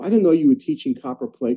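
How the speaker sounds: huffy, affronted, indignant, put-out tone. Retelling what a woman outside the class said: imitating an indignant woman. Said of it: "the woman was very indignant".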